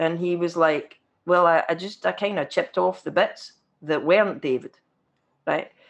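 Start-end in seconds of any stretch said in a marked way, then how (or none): none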